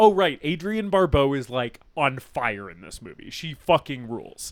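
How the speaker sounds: usual speaking voice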